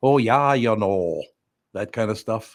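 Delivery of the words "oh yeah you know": deliberate, stretched-out, slow put-on Norwegian accent. Imagining how a guest would answer a greeting: imitating a Norwegian accent. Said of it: "Is it that bad?".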